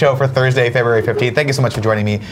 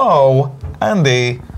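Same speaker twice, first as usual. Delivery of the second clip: put-on voice shifting from nasal to throaty. Showing an impression of Walken: Walken impression, nasal then deep. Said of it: "nasally up top, deep in the throat".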